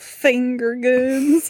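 over-the-top, bad, exaggerated fake Southern accent. Showing the silly line always said on video calls: bad exaggerated Southern accent. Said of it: "with like a very bad exaggerated southern accent".

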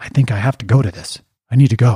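put-on trembling voice. Retelling a friend's phone call about joining the trip: imitating a trembling voice. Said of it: "he said it with, like, trembling".

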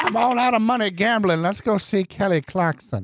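put-on high old lady voice. A host repeats a comic bit for a co-host in an old lady voice. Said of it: "That's my old lady voice".

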